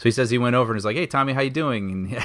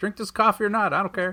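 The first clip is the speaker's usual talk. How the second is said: pitched-up, polished movie-star commercial announcer voice; 9 semitones higher than usual. Imagining a coffee commercial spokesperson line: Tommy Lee Jones impression. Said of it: "I can imagine him in the commercials".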